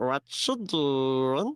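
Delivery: little peeping creature voice. Voicing Glebnor peeping up under the table: Glebnor voice, peeping. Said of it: "Glebnor peeps up and goes".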